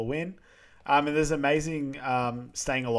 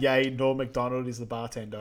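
plain

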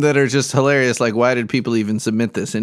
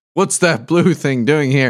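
put-on booming deity voice. Scrolling through a post, the speaker voices God's first words: booming God voice. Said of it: "A booming voice too".

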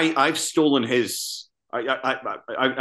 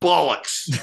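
spat out with real venom, pitched up; 5 semitones higher than usual. Showing how the word must be said: said with venom. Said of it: "just gotta be said with some venom".

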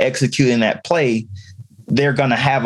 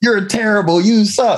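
mock, higher-pitched, clumsy yelling; 9 semitones higher, 3 dB louder than usual. Imitating a bad coach when a kid comes off the field: imitating a bad coach yelling. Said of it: "they just yell".

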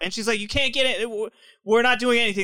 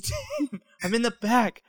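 secretive, slow, hushed half-whisper; 4 semitones higher, 4 dB quieter than usual. Retelling a phone call made while hiding: imitating own past half-whisper. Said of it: "I'm whispering on the phone too".

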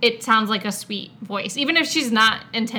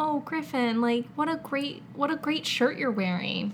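put-on sweet voice, higher, quieter, slower; 4 semitones higher, 6 dB quieter than usual. Mimicking how an actress always sounds, imitating an actress's sweet voice. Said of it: "that's how her voice sounds all the time".

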